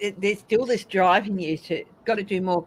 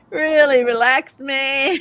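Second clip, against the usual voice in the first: full surfer dude voice, pitched a bit higher; 6 semitones higher, 6 dB louder than usual. Recall the turtle from Finding Nemo, in an Owen Wilson surfer dude voice. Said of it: "Owen Wilson's Surfer Dude voice".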